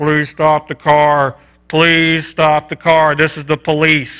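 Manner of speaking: put-on megaphone announcer voice. Retelling a police stop, quoting the officer over his horn: imitating a police megaphone announcement. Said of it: "got on his little horn thing".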